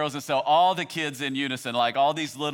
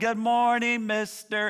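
put-on chorus of children's voices, higher pitch; 7 semitones higher than usual. Parent recalls a hundred children's morning greeting, imitating little kids' voices. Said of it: "all those hundred little voices that were going".

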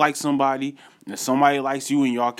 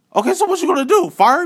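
very high, shrill, raised, combative and aggressive outburst; 6 dB louder than usual. Recounting a phone call about a granted day off, retelling aggressive phone talk. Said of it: "I'm getting real aggressive now".

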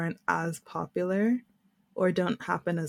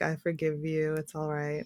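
acted kindly, magnanimous, gracious, benevolent tone; 2 semitones lower, 4 dB quieter than usual. Retelling how he answers her apology, imitating a benevolent tone.

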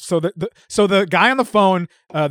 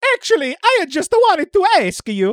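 put-on Italian accent, voice very high; 11 semitones higher than usual. Told by a director to try an italian accent, repeating the line in an italian accent. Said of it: "Italian accent, bub".

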